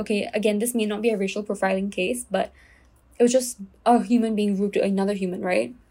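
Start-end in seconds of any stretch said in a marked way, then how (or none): none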